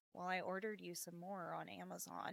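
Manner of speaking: dropped as deep as possible, very soft and hushed. Retelling what he said, in his deep Squidward voice. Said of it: "Squidward voice, as deep as he can go".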